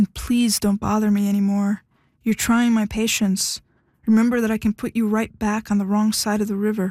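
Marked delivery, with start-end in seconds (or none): none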